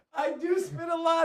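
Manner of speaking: high, slow, exaggerated joking delivery. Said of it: "No, seriously".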